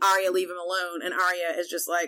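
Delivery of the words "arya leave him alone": ordinary delivery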